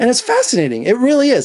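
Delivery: high voice, cracking and breaking mid-line. Praising a movie about Jackie Kennedy as fascinating: voice cracking. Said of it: "Listen to my voice crack".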